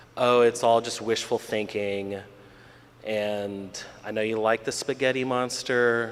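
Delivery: normal talking voice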